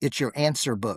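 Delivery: half-whispered under the breath, hardly heard. Retelling a chess player's answer to a tourist: imitating a barely audible half-whisper. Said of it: "he would whisper where you could barely hear him".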